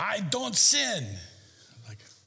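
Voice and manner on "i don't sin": put-on heavy, thick German accent laid on big, raised. Recalling a woman from Germany he once met, in a big German accent. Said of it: "she'd say with a big accent".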